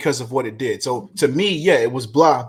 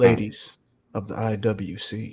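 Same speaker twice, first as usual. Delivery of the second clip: put-on ASMR whisper, lower and quieter; 4 semitones lower, 6 dB quieter than usual. Introducing the next speaker after dropping the bravado: put-on ASMR whisper. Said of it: "bring it down to a nice whisper, the A S M R shit".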